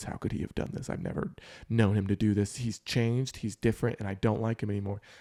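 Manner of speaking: mock frustrated tone, imitated frustration. Acting out a partner's words during a conflict: imitating someone frustrated. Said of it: "where I frustrated you to no end".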